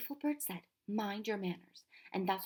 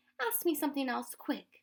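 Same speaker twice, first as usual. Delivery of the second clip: fierce delivery with raised pitch; 5 semitones higher than usual. Reading a story aloud, a frightened girl urging a friend: fiercely. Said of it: "said fiercely".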